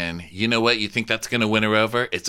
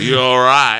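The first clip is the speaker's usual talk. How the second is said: put-on mock-threatening taunting voice, higher and louder; 3 semitones higher, 8 dB louder than usual. Retelling a scene where a character taunts Jason: imitating a pseudo-threatening taunt. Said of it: "a pseudo-threatening way".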